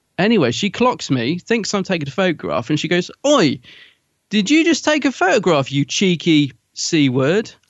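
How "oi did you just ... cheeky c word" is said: put-on really loud, drawn-out shout. Retelling being confronted in a queue: imitating Miriam Margolyes shouting loudly. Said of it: "Really loudly".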